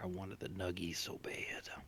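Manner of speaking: breathy whisper full of longing and craving. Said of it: "I was like".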